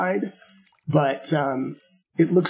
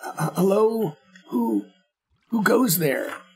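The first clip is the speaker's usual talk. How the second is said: high, halting, stammering voice of a strange creature; 5 semitones higher than usual. Voicing a creature that peers out at the players: creature voice. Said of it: "He says".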